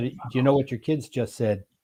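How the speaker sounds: ordinary delivery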